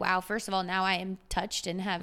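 ordinary delivery

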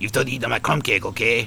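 voice dropped low in pitch. Telling the others about a Muppets character, doing the Pepe voice. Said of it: "this incredible shrimp crustacean character called Pepe. And he's like".

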